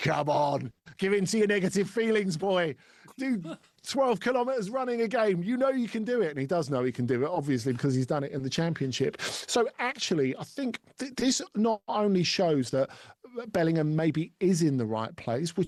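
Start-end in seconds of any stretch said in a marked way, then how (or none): 0.0-6.3 pitched-up, coaxing villain voice, kept high. Imitating a coach praising a young player, Emperor voice. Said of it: "he sounds like the Emperor talking about Luke Skywalker".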